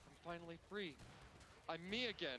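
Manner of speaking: normal talking voice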